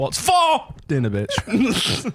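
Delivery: high, slow, drawn-out "bitch", stress on "for".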